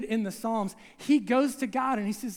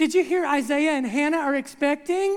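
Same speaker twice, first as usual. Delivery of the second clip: loud, put-on snide, snarky delivery; 4 semitones higher, 5 dB louder than usual. Retelling gossip as another lady walks by: imitating a snarky lady. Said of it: "one of the snarky ladies will go".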